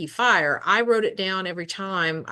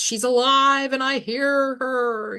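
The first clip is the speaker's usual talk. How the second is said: mock screamed, high, frantic outburst; 6 semitones higher than usual. Retelling a film scene where a character screams: imitating a character screaming. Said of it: "he screams".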